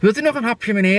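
high, bright, very merry put-on cheerful voice. Retelling offering snacks to a man at a party, acting very cheerful and happy. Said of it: "En echt heel vrolijk en blij".

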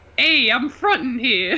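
high, put-on New York accent. Reading one of the speaker's own tweets aloud, in a New York alter-ego voice. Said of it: "New York alter voice".

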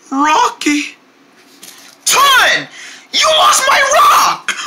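very high yell, rising in pitch throughout. Confronting the other character after the rock is lost, yelling. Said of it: "I didn't mean to yell at you".

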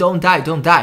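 mock frantic, high-pitched, panicked tearful yelling. Retelling the same scene, she is panicking and yelling: imitating panicked crying yells. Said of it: "panicking, crying, yelling".

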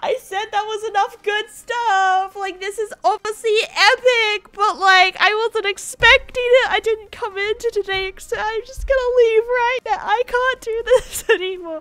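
overwhelmed happy crying, high, loud tearful sobbing.

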